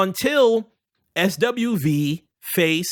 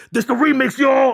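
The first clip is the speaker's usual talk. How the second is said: high scream with a rough edge; 6 semitones higher, 4 dB louder than usual. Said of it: "in my [name] voice".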